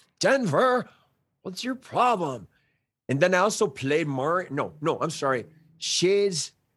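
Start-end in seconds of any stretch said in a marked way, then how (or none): 0.2-2.5 pitched-up beach-bum surfer dude voice. An actor recalls a role on one of his first shows: Shades surfer-dude voice. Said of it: "who is a surfer dude, you know, who's just like this".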